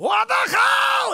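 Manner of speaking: very loud, very high, long yell, climbing in pitch. Speaker reenacts a father screaming at his son: retelling a yell, low to high. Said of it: "He would start low".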